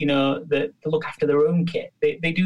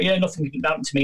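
mock cocky, arrogant, bragging voice. Retelling what the cocky, arrogant trainees would say: imitating a cocky, arrogant trainee. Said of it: "the really cocky, arrogant ones".

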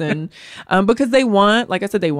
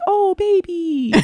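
fake cute voice, much higher pitch; 12 semitones higher than usual. Describing how she'd greet a funny-looking newborn baby, fake cute voice. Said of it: "you got to do better with your fake cute voice".

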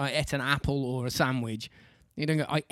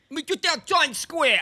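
exaggerated New York accent; 14 semitones higher, 6 dB louder than usual. Taking turns trying out accents, in an exaggerated New York accent. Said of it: "That's quite a good New York accent".

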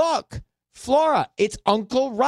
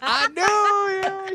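very high put-on Southern drawl, long drawn "I"; 14 semitones higher than usual. Repeat a woman's words to show your co-speaker how she sounded, imitating a woman who sounds Southern. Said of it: "She sounds Southern there".

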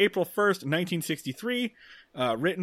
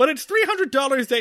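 normal talking voice

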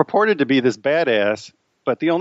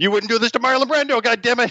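put-on screaming, pitched higher; 10 semitones higher than usual. Retelling how Harvey Keitel screamed over a walkie-talkie: imitating Harvey Keitel screaming. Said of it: "walkie-talkie screaming".

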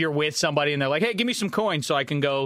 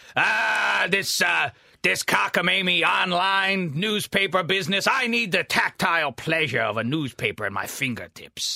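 put-on slow, grumbling, cranky old-man voice; 4 semitones higher than usual. Mocking another speaker as a complaining curmudgeonly old man: imitating a curmudgeonly old man. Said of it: "You're like the curmudgeonly old man who complains".

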